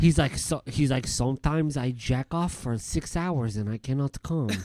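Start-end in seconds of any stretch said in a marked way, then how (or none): 1.1-4.6 attempted put-on Eastern European accent. Imitating a perfume reviewer, attempting an Eastern European accent. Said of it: "trying to do an Eastern European accent".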